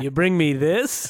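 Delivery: put-on sarcastic actor voice. Imitating an actor who complains on set: imitating Sirico being sarcastic. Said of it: "a sarcastic".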